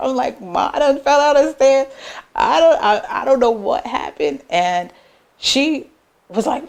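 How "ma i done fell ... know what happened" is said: play-acted sobbing, talking through tears. Retelling a phone call to mom after falling down stairs: retelling own crying. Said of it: "crying on the phone".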